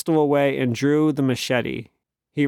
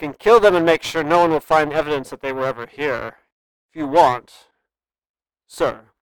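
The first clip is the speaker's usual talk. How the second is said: plainly impatient tone; 3 dB louder than usual. Narrator reading a character's line after he steps toward a woman, impatient voice. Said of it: "continued in his impatient voice".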